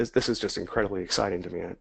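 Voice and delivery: no audible excitement. Speaker telling viewers about his trading system, excitement not audible in voice. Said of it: "you can't really hear it in my voice right now".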